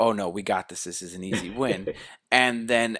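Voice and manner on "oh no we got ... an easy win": put-on almost laughing. Recapping an episode, the speaker acts out the other team laughing at rivals, retelling almost laughing. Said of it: "they were almost laughing at them going".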